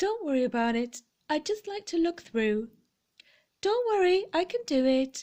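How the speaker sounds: small, polite motherly voice. Retelling what the speaker said to a man, in a little polite voice. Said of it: "In that little voice".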